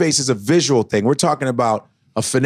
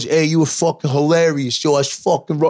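Italian wiseguy mobster talk; 2 semitones higher than usual. Retelling what the club's suited guys say after a set: imitating Italian goomba stereotype. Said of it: "They all talk like that".

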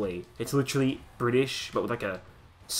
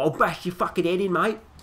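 loud, raised put-on English hooligan voice; 8 semitones higher, 5 dB louder than usual. Mocking English soccer hooligans: imitating an English hooligan. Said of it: "they're all".

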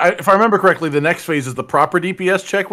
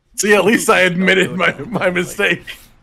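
shouting. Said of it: "He's yelling at us".

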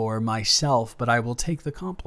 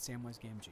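very soft mutter under the breath. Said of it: "just under your breath".

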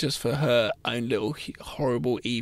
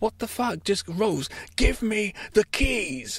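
mock fed-up shriek, very high and drawn-out; 9 semitones higher than usual. Retelling a man yelling at a woman in front of her parents, imitating someone screaming. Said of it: "he's screaming at her in front of her parents".

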